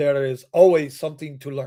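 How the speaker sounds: put-on deep baritone voice with a Spanish accent. Recalling what a man always said coming into the pro shop, Andrés Gómez deep baritone voice. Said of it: "deep baritone voice with that that that Spanish boss".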